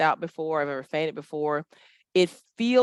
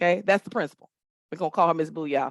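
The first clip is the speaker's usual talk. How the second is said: normal talking voice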